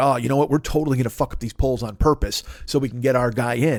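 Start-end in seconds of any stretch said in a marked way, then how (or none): none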